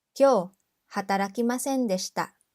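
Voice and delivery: normal talking voice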